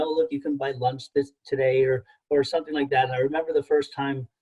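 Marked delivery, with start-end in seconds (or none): none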